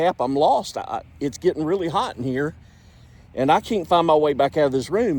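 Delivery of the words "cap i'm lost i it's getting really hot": ordinary delivery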